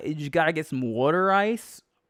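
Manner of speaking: Delaware County Pennsylvania accent. Showing the Delco accent being practised: trying a Delco accent. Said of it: "this is my".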